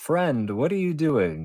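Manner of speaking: monster giant voice calling out, pitched high. Game master voicing a giant heard by players who speak giant, calling out. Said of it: "You hear it call out".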